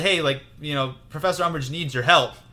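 plain

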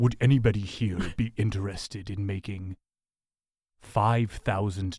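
put-on deep voice. Retelling what a child of about seven said on walking up, deep voice. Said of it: "with a a, a deep voice".

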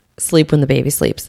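ordinary talk

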